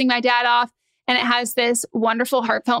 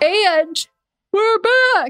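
pitched-up words spoken through a yawn; 9 semitones higher, 3 dB louder than usual. Coming back from an ad read, a host speaks yawning while speaking. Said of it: "Sorry, I was yawning".

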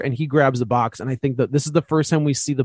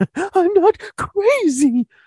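very high, gasping, hyperventilating panic; 3 dB louder than usual. Speaker demonstrates a way of talking that makes you sound crazy, hyperventilating voice. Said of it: "In this like hyperventilating kind of voice".

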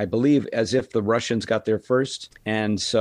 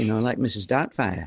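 put-on Yorkshire accent. Recalling a childhood nanny from Yorkshire, imitating her Yorkshire nanny accent.

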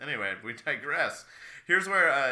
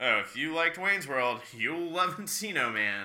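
slow, sarcastic, emphatic reading; 4 semitones higher than usual. Reading a movie blurb aloud as if sarcastic: mock sarcastic reading. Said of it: "kinda like a sarcastic exclamation mark".

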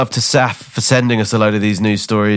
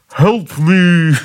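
put-on, slightly muffled voice; 9 semitones higher, 3 dB louder than usual. Retelling words she heard in a toilet cubicle, in Bobby's slightly muffled voice. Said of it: "In my Bobby's slightly muffled voice".

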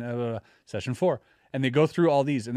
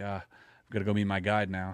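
mock sad, lower and quieter; 6 semitones lower, 5 dB quieter than usual. Retelling a man's conversation after his death, imitating a sad voice. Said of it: "you sound sad".

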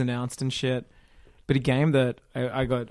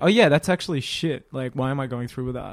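plain

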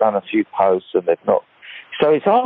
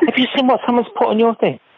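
put-on very high-pitched, worked-up, fired-up kid voice outburst; 14 semitones higher than usual. Retelling how the kids react to stuff posted online: imitating angry, fired-up kids. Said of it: "And they're all fired up".

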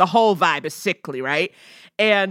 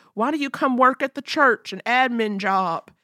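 put-on vague, half-guessed down-home accent, pitched up; 5 semitones higher than usual. Recapping a story where DJ offers Trish a job, in DJ's down-home accent. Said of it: "me doing whatever DJ's down-home accent".

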